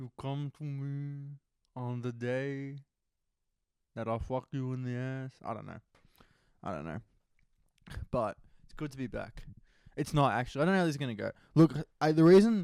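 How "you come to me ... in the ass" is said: poorly done mob boss voice, soft and slow. Speaker who has practiced The Godfather a lot tries again, in a bad Godfather impression. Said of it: "You gotta get the teeth out".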